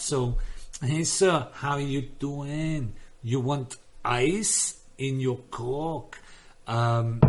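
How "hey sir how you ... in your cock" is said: slow, drawn-out Tagalog accent. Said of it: "I can do good Tagalog because everything is drawn out".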